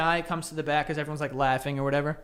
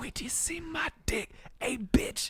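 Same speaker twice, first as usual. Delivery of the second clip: hushed whisper, under the breath; 9 semitones higher, 8 dB quieter than usual. Retelling walking the eighth-grade halls, whispering. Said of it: "I was just walking around whispering like all the time".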